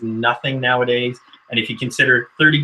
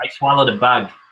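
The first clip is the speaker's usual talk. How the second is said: attempted Boston accent. Trying out accents in conversation, an attempted Boston accent. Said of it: "trying to do that with a Boston accent".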